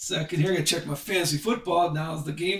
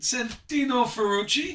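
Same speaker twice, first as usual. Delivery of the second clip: slow, put-on Italian accent; 6 semitones higher than usual. Announcing the next driver, in his best italian accent. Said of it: "in my best Italian accent".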